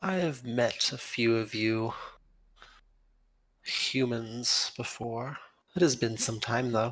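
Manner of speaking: gently spoken. A queen answers a human visitor who has just introduced himself, soft-spoken. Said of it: "She seems soft spoken in the way she speaks".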